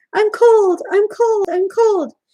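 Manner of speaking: very high, loud, drawn-out squeaky little pup voice. Reading the pups' complaint to their mother in a story, squeaking loudly. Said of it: "pups were squeaking loudly".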